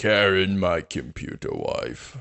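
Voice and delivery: cartoonish voice straining upward in pitch. Asked to go higher, the speaker tries again with a Plankton impression. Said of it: "my Plankton impression".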